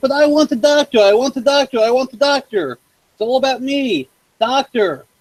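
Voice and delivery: whiny, high, bratty put-on voice. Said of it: "whiny little shit".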